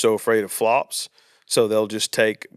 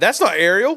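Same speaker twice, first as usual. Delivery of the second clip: put-on child blurting out, very loud and very high; 10 semitones higher, 5 dB louder than usual. In a movie theater during previews, imitating Charlotte speaking very loud. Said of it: "she says very loud".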